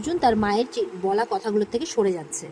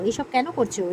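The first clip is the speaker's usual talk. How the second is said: ordinary delivery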